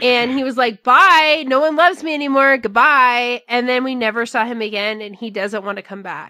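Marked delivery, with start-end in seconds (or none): 0.8-3.4 loud voice dripping with sarcasm. Retelling a wrestler leaving after being booed: sarcastic Batista goodbye. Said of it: "it was the most sarcastic".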